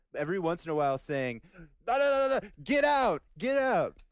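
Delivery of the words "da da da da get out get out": shrill, very high, drawn-out scream. Recounting a man who pulled the speaker out of the room, imitating someone screaming. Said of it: "screaming at me in Italian".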